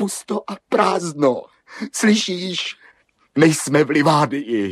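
high-pitched, loud, despairing shout. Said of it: "Nekřičte. Neplačte".

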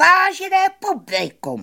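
shrill, very high, loud announcing yell. Bambulíno addresses the audience while stepping down from his carriage, shouting. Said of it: "křičel Bambulíno".

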